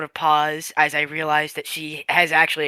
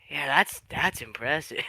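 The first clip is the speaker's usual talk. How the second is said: quiet muttering under the breath; 6 dB quieter than usual. Voicing Val, who has gone quiet: muttered under breath. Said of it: "under his breath".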